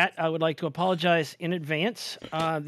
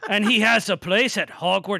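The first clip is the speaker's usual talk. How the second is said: put-on Scottish accent, grandfatherly, higher and louder; 4 semitones higher, 5 dB louder than usual. Reading the back of a Scots-edition book aloud: put-on Scottish accent. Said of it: "I gotta channel me granda".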